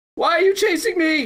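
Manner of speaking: very high, shrieking, sobbing, inconsolable screaming cry. Retelling what a woman in a veering car said: imitating someone screaming and crying. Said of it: "starts screaming inconsolably and crying".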